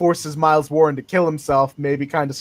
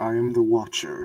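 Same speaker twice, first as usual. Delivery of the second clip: put-on voice, every word ringing with echo; 5 semitones lower, 7 dB quieter than usual. Trying out a voice for the Watcher character: echoey Uatu voice. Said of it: "Let me try and do an echoey voice for Uatu".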